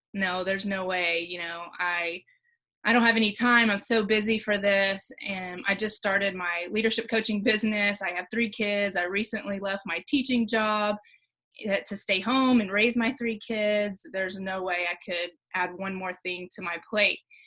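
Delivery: ordinary delivery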